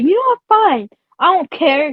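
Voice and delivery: put-on defiant, dismissive tone, pitched high. Retelling an argument, the speaker acts out a woman's reply: mock-defiant dismissive reply. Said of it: "And she was like".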